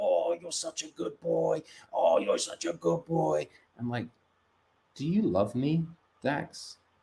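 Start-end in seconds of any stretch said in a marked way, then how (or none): 0.0-3.5 creaky voice used for talking to a dog. Retelling what they say to their own dog: talking-to-the-dog voice. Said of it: "I do the, the the dog voice".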